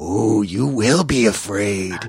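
teasing little swamp-creature voice. Retelling how Yoda answers Luke on Dagobah: Yoda voice. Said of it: "he's like".

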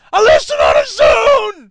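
very loud, very high, shrill, booming, drawn-out angry yell. Acting out an impatient listener who wants the topic: put-on angry listener voice. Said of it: "no wonder you're angry".

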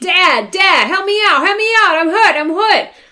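put-on high, childish kid voice yelling. Retelling a kid who fell down, imitating a kid yelling. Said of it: "starts yelling".

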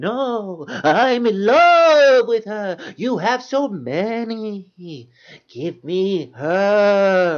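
horrible, very slow, stretched-out high voice. Retelling a scene, speak Torgo's lines: horrible Torgo impersonation. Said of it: "I'm trying to do a horrible Torgo impersonation".

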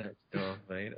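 very quiet, hushed, low-key delivery. Retelling what Malcolm McDowell said at a screening: quiet imitation of Malcolm McDowell. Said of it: "Just very kind of quiet".

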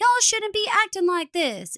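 put-on high, childlike voice. Retelling how Katie acts like a small child stamping her feet: imitating childish Katie. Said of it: "acts like a small child, like she's stamping her feet".

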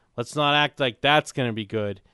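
ordinary talk

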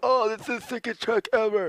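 very high, mocking online-commenter voice. Retelling what everyone says about a dead flat track: imitating online commenters' voice. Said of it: "every time I read a comment, that's the voice".

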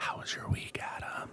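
very low voice. Podcast host asking the co-host about his week, talking very low. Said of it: "I can't talk this low".

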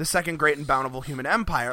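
usual speaking voice

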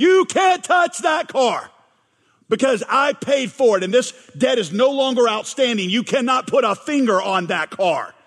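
mock loud voice. A speaker acts out confronting the bank repossessing a car, loud voice. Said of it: "with a loud voice, you say".

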